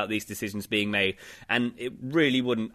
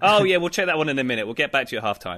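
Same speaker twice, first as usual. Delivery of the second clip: put-on lazy, relaxed referee voice, higher and louder; 3 semitones higher, 4 dB louder than usual. Imitating referees with their feet up, drinking Carling: imitating relaxed referees. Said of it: "just sitting there with their feet up".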